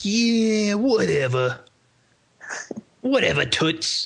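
put-on drawn-out tough New York street-kid voice. Retelling a movie scene, a kid fighting off a thug: imitating a tough New Yorker kid. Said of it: "but New Yorker kid".

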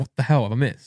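ordinary delivery

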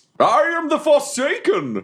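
very high voice with swooping pitch. Introducing a character after being asked what that was: Forsaken voice. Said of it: "This is my voice".

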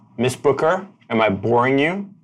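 cutting, pointed, sharp, high-pitched tone. Narrator voicing Kennedy, who realizes Miss Booker stopped paying attention, Kennedy's sharper tone. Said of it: "he speaks in a sharper tone".

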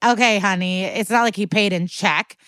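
plain

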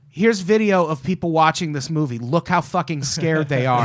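ordinary talk

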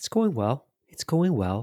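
subdued, muted, soft, low-key voice. Show host answering a co-host's how's-it-going, in a muted voice. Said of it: "I don't know why I'm speaking in a muted voice".

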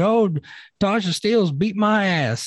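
mocking, high, slow country accent.

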